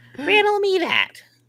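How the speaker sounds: thick, heavy, very high put-on Jersey accent. Speaker imagines a game character saying a riddle line, Abby in a Jersey accent. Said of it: "in this Jersey accent".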